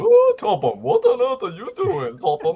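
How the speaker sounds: very high pitch, swooping slowly, drawn out. Imitating Dowager Hatt calling out to Topham: Dowager Hatt voice. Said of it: "she talks like that in the show".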